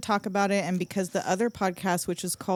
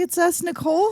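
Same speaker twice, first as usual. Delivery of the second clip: statement tune ending upward on Nicole; 10 semitones higher, 6 dB louder than usual. Opening the podcast with names, rising like a question. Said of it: "I said that like a question mark".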